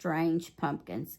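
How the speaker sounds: plain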